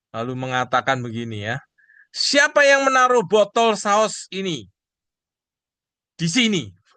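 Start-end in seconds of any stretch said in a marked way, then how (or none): 2.2-6.7 mock angry, demanding, loud, high scolding. Telling the audience how a father reacted to the sauce bottle, mock-angry scolding father. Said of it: "dengan nada marah".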